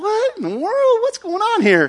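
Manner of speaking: very high, swooping pitch, utterly baffled. Retelling the Bible story, acting out the giant's surprise: voicing Goliath confused. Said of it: "And Goliath's like".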